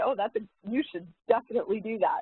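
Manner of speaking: high, fast, fake sincere, straight-faced. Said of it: "say that with a straight face".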